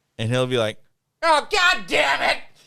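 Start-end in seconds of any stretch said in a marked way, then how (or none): 1.2-2.4 very high, drawn-out puppet-like squeak. Act out him suddenly heard from his office 30 feet away, in a very Muppety voice. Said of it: "his voice is very Muppety".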